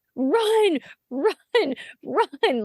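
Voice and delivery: cheering, high yelling. Retelling the speaker's husband yelling during a game; mock yelling. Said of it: "I hear my husband start yelling".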